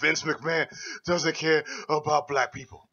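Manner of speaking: breathless, out-of-breath delivery. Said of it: "How out of breath you were when you said that".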